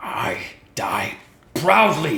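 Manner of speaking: loud, rasping hobgoblin creature shout. Narrating a fight, voice the hobgoblin as it shouts. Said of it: "it shouts".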